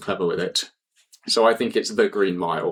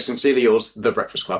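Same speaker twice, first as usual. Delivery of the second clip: ordinary delivery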